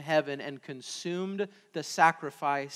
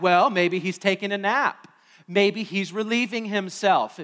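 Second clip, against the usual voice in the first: scornful, jeering, sarcastic, mocking taunt; 4 semitones higher, 6 dB louder than usual. Retelling a Bible story where a prophet taunts rival prophets; retold mocking taunt. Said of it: "Elijah mocked the prophets".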